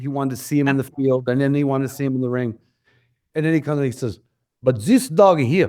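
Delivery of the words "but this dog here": put-on fake German accent. Retelling what a man said about a dog, in a put-on German accent. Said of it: "I'm doing a German accent because I can't do Italian".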